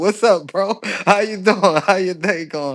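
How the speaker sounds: acted high, loud, smiling, laughing friendly voice. Retelling how he greets a jealous coworker: imitating own smiling, laughing greeting. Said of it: "smiling, laughing".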